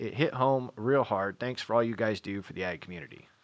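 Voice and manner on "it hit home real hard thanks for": plain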